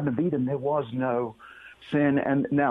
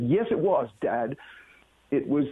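usual speaking voice

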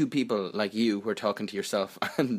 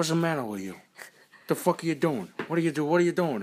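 pitched-up, confrontational, in-your-face voice; 6 semitones higher than usual. Retelling how a woman confronted the speaker's friends: De Niro impression. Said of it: "That was trying to be De Niro".

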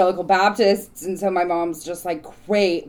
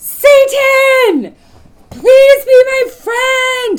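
mock child shout, higher and louder; 13 dB louder than usual. Retelling shouting into a manhole cover as a child: imitating own childhood shouting. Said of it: "shouting into the manhole cover".

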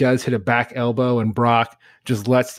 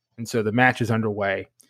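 usual speaking voice

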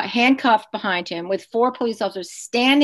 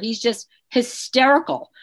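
ordinary talk

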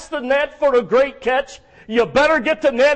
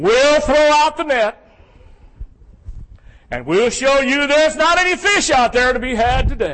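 sarcastic, dismissive, know-it-all tone. Acting out Peter answering Jesus about the nets: imitating Peter's sarcasm. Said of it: "you can almost read the sarcasm in Peter's response".

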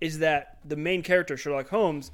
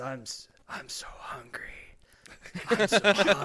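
slow, ravenous, fanged monster voice. Voicing a fanged creature that just threw a fighter down: hungry monster voice. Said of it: "blood is dripping from his fangs. He says".

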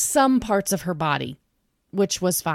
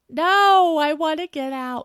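mock tearful, high, sobbing crying; 9 semitones higher, 3 dB louder than usual. Retelling her answer while you offer to help, imitating someone sobbing. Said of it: "Just sobbing".

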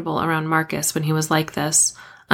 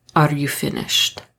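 cool, controlled, on the brink of snapping; 2 semitones lower than usual. A man faces the narrator, who refuses to look away; cool, controlled tone. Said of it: "His tone was cool, controlled".

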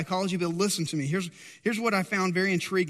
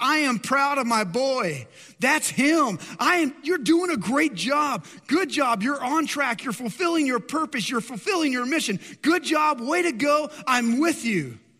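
high, loud calling-out shout; 6 semitones higher, 3 dB louder than usual. Retelling the Father's words from the opened heaven: imitating a shout. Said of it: "he begins to shout out and says".

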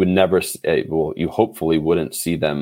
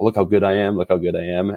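usual speaking voice

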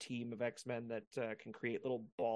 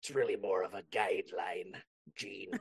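low, hoarse, raspy pirate captain voice; 4 semitones lower than usual. Doing one of your favorite impressions for Gene, use a Barbossa impression. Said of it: "That sounds just like him".

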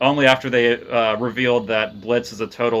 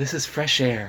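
light, airy, hushed delivery; 2 semitones higher, 5 dB quieter than usual. Challenged to show a better Ira Glass, doing an Ira Glass impression. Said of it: "you do your Ira Glass".

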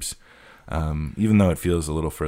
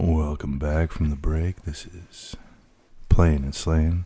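super low FM radio DJ announcer voice. Host welcoming listeners back from the break, super low FM DJ voice. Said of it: "you have to use like a super FM DJ voice, like super low".

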